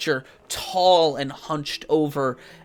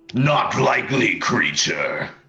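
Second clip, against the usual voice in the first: dramatic, deep, swooping fantasy hero voice; 4 semitones lower than usual. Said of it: "they all sound really stupid when they talk like".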